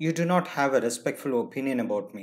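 ordinary delivery

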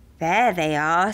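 ordinary delivery, nothing marked

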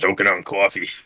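put-on, fake New York accent. Repeating a joke about choking on coffee: put-on new york accent. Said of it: "we're just speaking New York accents".

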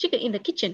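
quick run-through of words. Teacher trying a confusing tongue-twister phrase for the class, said quickly. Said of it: "đọc nhanh thử là cô nè".

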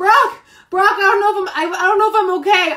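put-on freaking out. Recounting screaming on the bed, speaking to brock, retelling freaking out. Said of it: "I honestly was freaking out".

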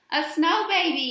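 proud, triumphant, high-pitched victorious shout. Right after dumping flour all over his sister, he announces: yelled triumphantly. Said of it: "yelled Martin triumphantly".

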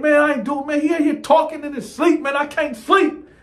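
very high, put-on, lifted-up register. Retelling his own reply when questioned during the night, in a higher voice. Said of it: "He done took me to my higher voice".

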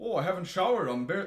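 high-pitched Minnesota accent. Asked to do any accent but their own, trying a Minnesota accent. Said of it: "Any accent that's not yours. Minnesota".

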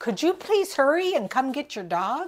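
urgent, high-pitched, fast, loud yell. Retelling yelling at a dog owner to hurry: imitating own yell. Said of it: "I yelled at him".

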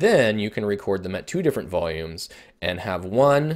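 plain

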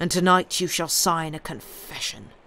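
usual speaking voice

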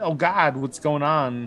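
scared, cringing, alarmed in-character cry. Playing a character walking through a panicking crowd: acting scared. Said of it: "We cringe. We're scared".

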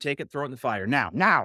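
mock-aggressive, startling, acted tone. Retelling the commands he gave her, acting out aggressive commands. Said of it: "I'm almost a little bit aggressive".

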